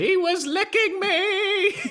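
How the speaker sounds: high, slow, shrieked scream. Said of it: "then scream out".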